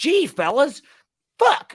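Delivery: shrill, booming, very high, loud put-on voice.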